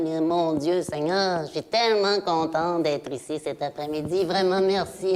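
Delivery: gushing, effusive politician impression.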